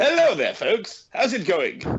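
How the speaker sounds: put-on posh southern English voice, high and sing-song. Guest joining the show on the line, greeting the audience: put-on posh voice. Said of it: "I thought I'd put a posh voice on".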